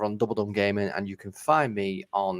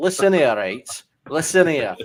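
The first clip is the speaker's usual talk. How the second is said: speaking with a Yorkshire northern English accent; 6 semitones higher, 9 dB louder than usual. Talking about not being in Sheffield, he speaks in a Yorkshire accent. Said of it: "He's got the accent as well".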